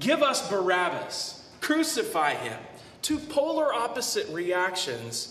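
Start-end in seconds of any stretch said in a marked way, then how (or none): none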